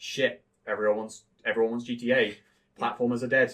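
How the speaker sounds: ordinary delivery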